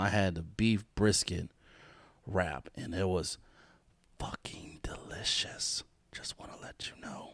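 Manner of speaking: whisper for dramatic effect. Speaker gives a restaurant shout-out, whispering for dramatic effect. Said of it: "I don't know why I'm whispering".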